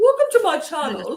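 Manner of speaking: put-on posh voice. Joking about showing clothes on a channel, mock posh voice. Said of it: "I'm being very posh right now".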